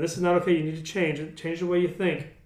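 ordinary talk

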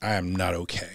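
put-on seething anger. Retelling waking up and answering the doctor, retelling seething anger. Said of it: "And I'm just like seething".

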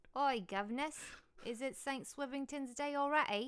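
loud, high, botched fake Australian accent. Riffing on Australian clichés with the others, bad fake Australian accent. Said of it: "No, that's not even Australian".

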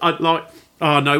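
plain

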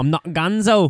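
put-on British accent. Quoting what someone said, in a british accent. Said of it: "That's British".

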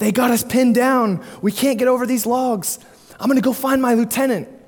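put-on raw recruit voice, high, rushed, panicky. Telling a war story, acting out a young recruit's panicked blurt. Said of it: "he just starts to panic, and he blurts out".

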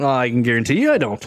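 ordinary delivery

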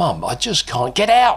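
very high, shrieking, screeching cry. Narrator reads the mother's outburst at her son: screeching. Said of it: "she screeched".

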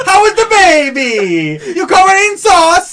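bad put-on Italian accent. After a joke about an italian wife, a bad italian accent. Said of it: "Italian God. accent like I don't even know where that was from".

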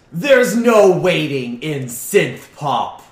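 put-on dj voice, unusual way of talking. A rival DJ refuses to hand back the set, in a changed voice. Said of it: "So obviously they've got their Skitty helmet on with the LEDs going wild. And they also have a jean jacket that has LED displays".

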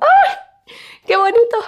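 very high, swooping, thrilled excited shriek. A podcast host talking to listeners: excited shriek. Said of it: "Perdón por romperte los tímpanos, pero estoy muy emocionada".

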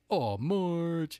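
high, loud, nasal, whiny cartoon voice. Talking about a cartoon voice actor, the speaker tries imitating a whiny cartoon voice. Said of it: "I guess he's always whining".

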